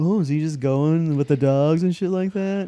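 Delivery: put-on talking-down voice. Recounting friends of friends asking about his work, mocking a condescending tone. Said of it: "but like real condescendingly".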